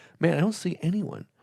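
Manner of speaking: bone-dry flat deadpan with no expression. Retelling an old coworker's instant reply to a question: imitating a quick deadpan coworker. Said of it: "he is so quick and deadpan about everything".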